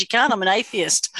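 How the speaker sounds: ordinary talk, nothing marked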